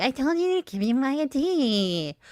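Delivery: whiny, nagging tone, high-pitched and drawn-out. Showing the wrong way to demand someone's ID: nagging whine. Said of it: "but this nagging".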